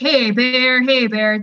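put-on loud, slow, commanding voice of authority. Retelling backing away from bears at a campsite, retelling trying to sound authoritative. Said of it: "trying to have this voice of authority".

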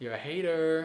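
put-on loud, high American accent. Asked for their best accent, trying a short line in an American accent. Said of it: "can I hear your best American accent?".

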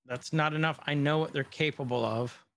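ordinary delivery

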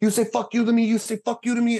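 very high shrill furious screaming. Retelling what the guy screamed while flipping the speaker around: imitating someone screaming. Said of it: "He starts screaming at me".

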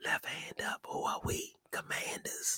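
whispered, very low, under the breath. Speaker says this part to the group real low. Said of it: "i gotta say it real real low".

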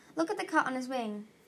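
plain reading voice

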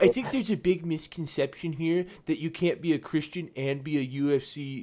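nerdy, condescending, talking-down know-it-all dork voice. Retelling what a guy he read about said, in a mock-condescending dorky voice. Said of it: "I'm doing the most condescending, dorky voice I can".

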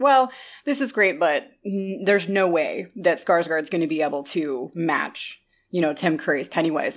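usual speaking voice

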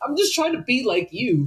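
mock very high voice on the verge of tears. Retelling a scene from a show, imitating Lola on the verge of tears. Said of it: "on the verge of tears".

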